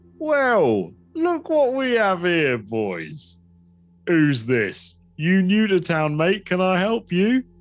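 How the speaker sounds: grinning, commanding leader-type voice. Voicing the grinning leader of a group greeting a newcomer: grinning gang leader voice. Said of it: "he grins a blackened teeth grin, and he goes".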